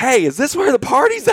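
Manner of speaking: acted very high shouting. Retelling yelling back through a closed door at a man: retelling own yell. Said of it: "and I yell".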